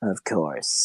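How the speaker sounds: spiteful, sour voice dripping with spite. Voicing a character who answers with spite: voice dripping with spite. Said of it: "the dripping of spite".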